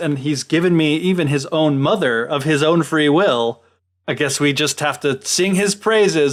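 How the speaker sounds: ordinary talk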